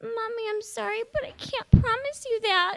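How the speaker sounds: put-on very high, weepy, tearful five-year-old child voice. Retelling a talk with her mommy, the speaker answers as her five-year-old self, imitating her tearful child self. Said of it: "a tearful five-year-old me looks at her and goes".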